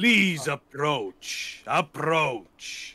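booming, very loud, full-volume voice. Narrating a scene to the group, speaking as Utz in a booming voice. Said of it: "this Utz booming voice".

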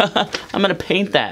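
mock sarcastic tone. Speaker retells their own Facebook comment on a photo, retelling a sarcastic comment. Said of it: "I comment sarcastically like".

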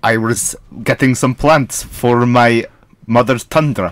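put-on Russian accent, very deep voice, slow. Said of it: "Still in Russian".

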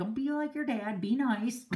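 ordinary talk, nothing marked

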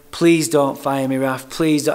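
put-on tearful crying voice. Retelling begging the boss not to fire him, imitating his own crying plea. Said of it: "I'm crying".

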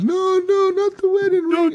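very high, weepy, tearful pleading tone. Retelling a game scene where a man begs to keep his ring: imitating a crying man.

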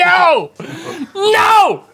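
very high, disgusted, screaming shriek. Reacting as a cohost shows off real worms: screaming. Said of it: "(Link screams)".

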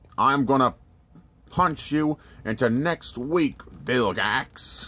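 cartoon alien hero character voice. Speaker showing off a Ben 10 figure, doing a Four Arms impression. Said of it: "that's my Forearms impression".

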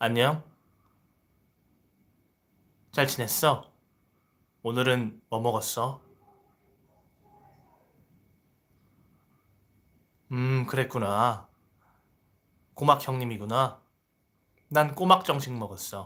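charming, handsome-sounding voice. Showing off how a handsome voice sounds when greeting: handsome-sounding voice. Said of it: "목소리가 잘생겼습니다. 잘 봐요? 이렇게 말하면 잘생겼죠".

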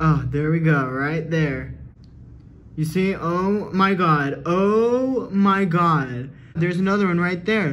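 loud, drawn-out, alarmed cries.

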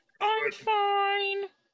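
small, high, muffled little voice. Retelling how she muffled her mouth with a towel in the bathroom: mock towel-muffled voice. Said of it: "a great little voice too".

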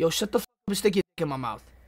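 fake, put-on New York street accent. Mocking how some men talk on Omegle, in a put-on New York accent. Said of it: "Like with a New York accent".

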